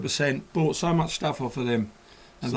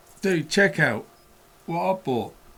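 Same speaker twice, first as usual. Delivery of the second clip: ordinary talk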